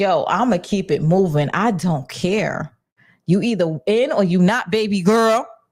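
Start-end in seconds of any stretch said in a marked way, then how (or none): none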